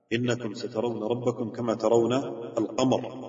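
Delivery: plain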